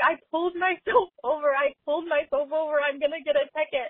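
put-on crying. Speaker recounts going home and quoting herself to her brothers, imitating own past crying. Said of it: "I'm just crying to my brothers".

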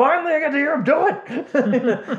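put-on, very high, over-the-top overexcited glee. Teasing the other speaker about how they talked at a show: mimicking overly excited Muppet voice. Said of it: "Just sounded like an overly excited Muppet".

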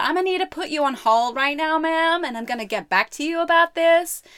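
atrocious, high-pitched, bad Texan accent. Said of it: "She said".

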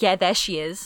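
acted, smug, self-satisfied told-you-so tone. Retelling own reply to staff at a red carpet: imitating own smug reply. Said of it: "I was so smug".

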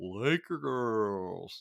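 slow, drawn-out arena-style announcer voice. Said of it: "Loves that".

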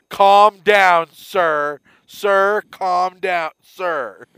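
booming, very loud, patronising, condescending soothing tone. Complaining about people who say sir condescendingly, mimicking one: mock-condescending tone. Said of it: "With the hand out".

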